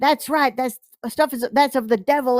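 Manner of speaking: awful, horrible fake preacher voice and accent. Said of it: "he does this horrible accent".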